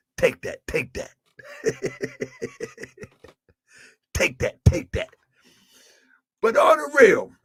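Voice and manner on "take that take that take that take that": breathy, breathed-out whisper. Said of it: "In my [name] voice".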